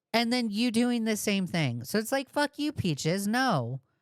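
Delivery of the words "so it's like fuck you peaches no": normal talking voice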